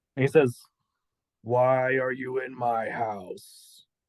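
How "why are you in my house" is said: very slow, haunting, eerie ghostly drawl. Retelling what a fading see-through figure said to him: Insidious ghost voice. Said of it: "Why do you sound like the ghost from Insidious three".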